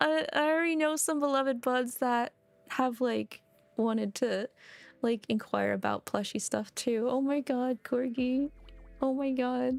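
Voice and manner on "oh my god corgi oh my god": tearing up, a little emotional, slow teary gush. Speaker touched by the plushie news, tearing up a little. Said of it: "I'm actually tearing up a little bit".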